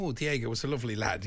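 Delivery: ordinary talk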